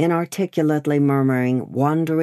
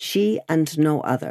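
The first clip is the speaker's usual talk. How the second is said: plain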